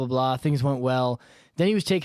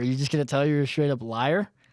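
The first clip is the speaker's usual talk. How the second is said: plain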